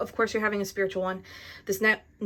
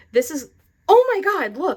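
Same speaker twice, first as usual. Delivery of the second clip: loud, high, swooping, drawn-out yell; 8 semitones higher, 7 dB louder than usual. Pointing out the imagery on a tarot card: yelling. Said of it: "Sorry for yelling".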